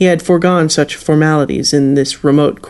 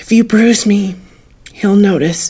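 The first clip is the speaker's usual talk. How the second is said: whispered, whispering voice, higher pitch; 5 semitones higher than usual. A woman held tightly by a man answers him: whispered. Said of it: "she whispered".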